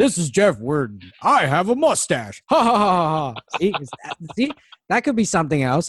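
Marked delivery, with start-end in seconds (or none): 0.0-3.6 slow, drawn-out, deliberate weird character voice. Showing the other speaker a bad impression of jeff. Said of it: "I'll do my impression of Jeff".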